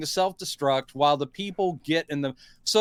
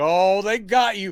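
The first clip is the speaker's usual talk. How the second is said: talking through fake laughter; 2 semitones higher, 3 dB louder than usual. Recapping a scene where a passenger jet is blown up, retelling laughing speech. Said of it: "just laugh like".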